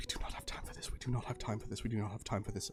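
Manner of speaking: rapid, whispered muttering under the breath. Voicing a character impatient about the delay: muttering under his breath. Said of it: "mutter under his breath".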